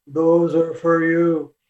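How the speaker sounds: real deep, low male voice. Recounting a voice heard when picking up a deck, in a deep booming male voice. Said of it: "in a real deep male voice".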